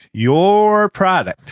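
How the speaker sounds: "your product" drawn out, high, slow and loud.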